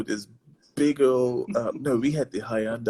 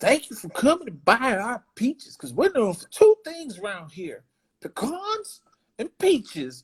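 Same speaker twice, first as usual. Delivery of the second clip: put-on very high, swooping little kid voice; 11 semitones higher than usual. Retelling what the little kid behind the counter said, imitating the little kid. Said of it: "my wife does the best impression".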